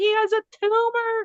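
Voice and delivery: put-on high-pitched screaming, loud. Retelling finding a lump on the bunny's belly: retelling own scream. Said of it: "I'm screaming".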